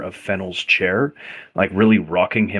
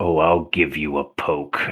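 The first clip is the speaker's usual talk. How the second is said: whisper, lower and slower; 5 semitones lower than usual. Answering another player's message in a role-play, whispering back. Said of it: "Tempus is going to whisper back".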